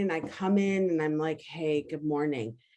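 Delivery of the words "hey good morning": soft, slow, tired voice. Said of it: "I'm really tired in the morning".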